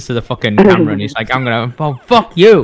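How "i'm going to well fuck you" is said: mock-angry, worked-up put-on rant. Joking about how Chris leans into the camera when worked up, imitating Chris getting angry. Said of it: "I love it when Chris gets all angry and worked up".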